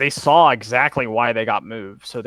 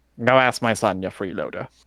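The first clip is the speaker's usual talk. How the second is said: put-on playful, whimsical, teasing old man voice; 2 semitones lower than usual. Voicing an old man teasing a player who asks for wine: playful whimsical old man. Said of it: "and more like, "Ha ha, whimsical old man."".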